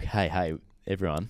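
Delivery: flat, dull, downbeat, low-energy voice. Imitating their own recent dull greeting: mock flat low-energy greeting. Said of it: "we've gone a little bit like".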